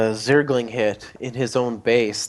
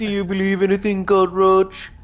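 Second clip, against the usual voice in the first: put-on Dutch accent, higher pitch; 8 semitones higher than usual. Joking about a soundboard line during match commentary: [name]'s Dutch accent. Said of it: "That wasn't the best Dutch accent".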